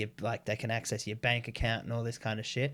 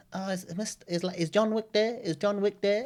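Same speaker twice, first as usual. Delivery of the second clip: very high, put-on Filipino accent; 9 semitones higher than usual. Retelling a phone call from a caller: imitating a Filipino caller's accent. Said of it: "So I just started talking like that back".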